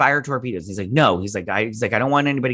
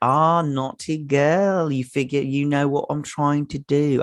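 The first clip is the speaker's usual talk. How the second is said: rough, put-on Cockney accent; 4 semitones higher than usual. Retelling what he said after they set off the light, attempted cockney accent. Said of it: "I don't know if I'm doing the right accent. Uh, it's Cockney accent".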